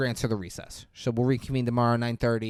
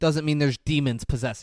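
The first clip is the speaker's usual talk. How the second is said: plain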